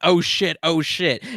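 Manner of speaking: play-acted startled, loud outburst, words stretched. Retelling a reaction to a game reveal: imitating own yell. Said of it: "So I literally yelled".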